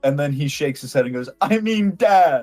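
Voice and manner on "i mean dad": put-on drunk voice, much higher, louder, slower. Narrating a drunk man who hugs you, correcting himself: very drunk voice. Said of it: "He's still very, very drunk".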